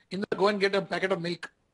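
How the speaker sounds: normal talking voice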